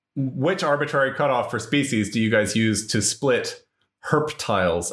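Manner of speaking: usual speaking voice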